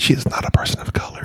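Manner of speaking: hushed voice. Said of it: "Why are we whispering this?".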